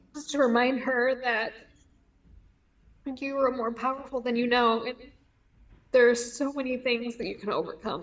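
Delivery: emotionally moved, voice close to tears. Sharing a message to your earlier self, getting emotional. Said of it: "I'm sorry I'm getting emotional".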